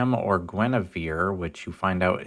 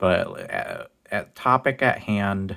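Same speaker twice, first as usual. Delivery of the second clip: very slow stammer, repeating "at". Talking to the camera about the topic at hand, stuttering. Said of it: "sorry for the stutter there".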